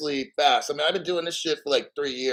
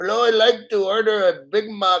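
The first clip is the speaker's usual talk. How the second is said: loud, high, put-on Indian accent; 6 semitones higher, 5 dB louder than usual. Retelling ordering at a fast food restaurant: put-on Indian accent. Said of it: "I use that accent like that".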